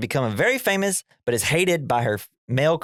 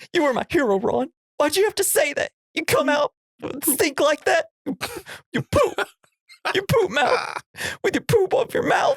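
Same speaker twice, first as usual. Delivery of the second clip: very high, acted, deeply hurt blubbering sobs. Retelling a movie scene, playing a hurt Garth: imitating Garth sobbing. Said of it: "super hurt and sobbing".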